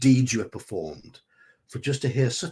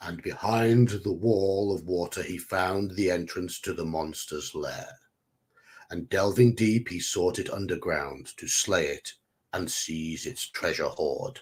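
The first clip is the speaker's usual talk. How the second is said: put-on deep storyteller narrating voice; 5 semitones lower, 4 dB quieter than usual. Narrating a tale of heroic deeds aloud in a put-on deep voice. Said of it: "I'm just going to do a deep voice".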